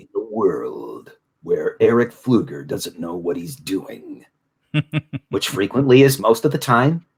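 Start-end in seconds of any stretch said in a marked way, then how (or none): 0.2-6.1 very low, deep, swooping movie-trailer announcer voice. After talk of learning a trailer narrator impression, the speaker tries a movie trailer narrator voice. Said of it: "learn to do a trailer narrator impression".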